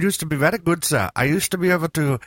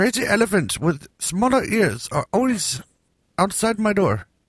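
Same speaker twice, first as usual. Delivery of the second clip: bad fake Indian accent, pitched up; 5 semitones higher than usual. Riffing with others on a show, doing a bad put-on Indian accent. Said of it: "I'm working on my Indian".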